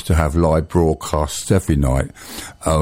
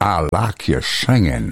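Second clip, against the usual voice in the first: so-so put-on Texan accent, swooping. Retelling what a man in a big Stetson said: imitating a Texan accent. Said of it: "it's not my, my best American accent or Texan".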